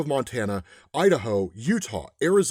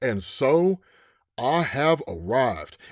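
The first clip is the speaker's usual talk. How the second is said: very slow, drawn-out, put-on Western drawl. Trying out voice acting, a stranger walks into a bar: Western voice. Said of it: "I'm gonna put on a Western voice here".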